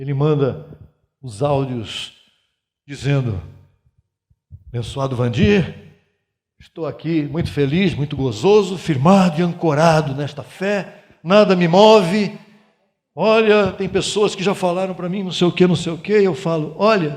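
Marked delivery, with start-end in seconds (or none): 4.7-12.4 put-on nordestino accent with a pleasant lilt. Retell the audio messages he sends from time to time, imitating a Northeastern Brazilian accent. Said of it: "com aquele sotaque nordestino gostoso de ouvir".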